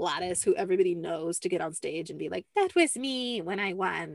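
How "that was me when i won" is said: put-on slow, drawn-out old lady character voice. Retelling what an older woman said on stage, imitating Gladys's voice. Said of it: "I don't know why I did that voice".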